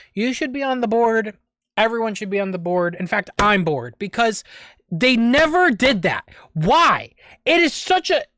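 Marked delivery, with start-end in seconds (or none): 3.0-8.3 getting worked up, angry, rising, increasingly loud. Talking to a friend about Sega's board, getting loud and mad. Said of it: "I'm getting loud. I'm getting mad".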